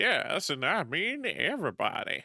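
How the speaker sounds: slipping into a southern accent. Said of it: "Why am I going southern this morning?".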